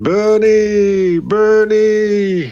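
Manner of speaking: clear, light, high calling. In a role-played scene, calling a name into the mist: clear, light, high calling. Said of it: "I send my clearer, lighter, higher voice piercing into the mist".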